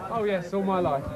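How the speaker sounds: plain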